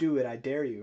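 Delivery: play-acted, swaggering, cocky and arrogant tone. Retelling own earlier taunt at the price chart: imitating own cocky dare. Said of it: "my cocky, arrogant statements of saying".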